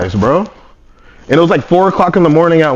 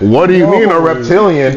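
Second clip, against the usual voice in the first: plain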